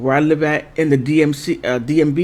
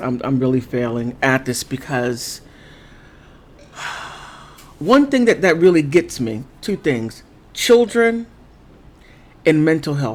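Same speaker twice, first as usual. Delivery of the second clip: fighting back emotion, near tears, struggling to hold it. Speaker on a painful subject, apologizing, struggling not to get emotional. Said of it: "I'm sorry, I'm failing at this".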